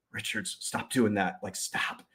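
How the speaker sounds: acted whispering. Retelling how the partner attorney warned him in court: imitating a whisper. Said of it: "He would whisper".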